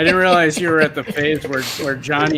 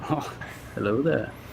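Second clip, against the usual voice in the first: very quiet, understated, soft, almost hushed voice; 2 semitones lower, 10 dB quieter than usual. Told they sound like Obi-Wan Kenobi, the speaker shows it off: Obi-Wan Kenobi impression. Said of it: "you sound like Obi Wan Kenobi".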